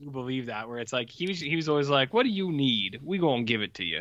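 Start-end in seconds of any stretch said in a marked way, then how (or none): 2.1-4.0 lightly put-on, slight hint of Cajun accent. Imitating Lincoln's talk as a joke: slight Cajun accent. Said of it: "this slight Cajun accent now".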